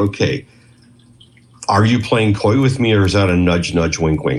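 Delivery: normal talking voice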